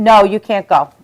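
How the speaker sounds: normal talking voice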